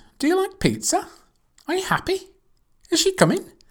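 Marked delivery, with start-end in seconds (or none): 0.2-1.1 pitch rises at the end, on "pizza". Teaching polite yes-no questions: rising intonation on pizza. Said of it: "Rising intonation to be polite".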